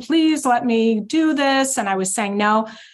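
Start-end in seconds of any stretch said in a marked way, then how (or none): 0.0-1.8 mock weepy, high, crying, pleading through tears. Retelling a young woman's plea on the phone, imitating someone crying. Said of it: "she was like crying".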